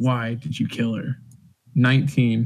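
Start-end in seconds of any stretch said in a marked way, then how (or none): 0.0-1.2 real, soft, menacing threatening tone. Retelling grabbing her collar to intimidate her, mock-menacing. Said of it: "real menacingly".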